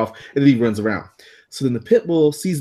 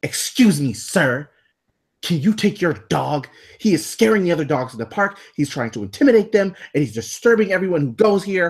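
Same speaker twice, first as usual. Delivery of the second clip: high-voiced, complaining woman's voice; 5 semitones higher than usual. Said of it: "Walks up about two inches from my face and is like".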